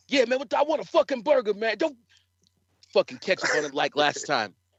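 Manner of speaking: put-on pushy hostile tone. Imagining an aggressive wrestler ordering fast food: imitating Rob Chef ordering aggressively. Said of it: "imagine Rob Chef just ordering some McDonald's".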